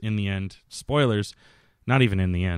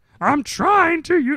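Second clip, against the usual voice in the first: very high, badly done shrill voice, drawn out, loud; 7 dB louder than usual. Quoting a line yelled in a movie, in a Pee-wee voice. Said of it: "that's a terrible Pee Wee".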